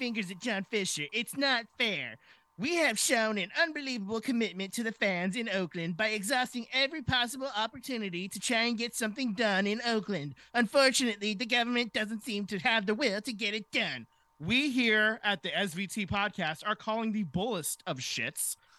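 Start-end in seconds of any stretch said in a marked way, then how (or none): 0.0-14.1 bratty, spoiled cartoon kid voice. Voicing a quoted statement for John Fisher: pseudo Cartman-like voice. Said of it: "I wanted to give him a pseudo Cartman-like voice".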